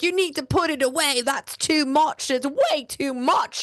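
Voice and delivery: bad, botched British accent, pitched way up. Retelling what two British guys told the speaker, botched British accent. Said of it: "I'm going to botch their accent".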